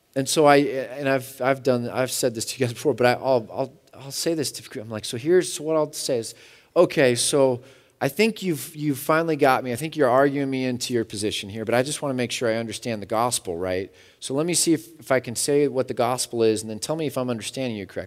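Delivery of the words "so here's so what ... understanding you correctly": ordinary talk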